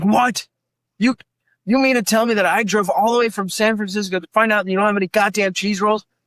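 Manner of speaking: put-on disbelieving anger. Retelling a customer who drove far only to find them sold out, imitating an angry customer. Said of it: "this one guy got so pissed off at me".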